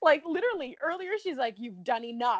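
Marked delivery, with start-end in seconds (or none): 1.6-2.4 put-on angry tone. Retelling what a woman said to her fiancé, mock-angry. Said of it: "she literally could not have said it in a more angry tone".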